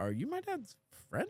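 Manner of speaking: huge rising lift, ending high on "friend". Retelling what someone asked the speaker at the door, big rising question. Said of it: "Like as in huge question mark".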